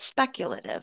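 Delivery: speculative said with correctly placed stress. Showing a learner the right way: correct word stress on speculative. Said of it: "stress should be here".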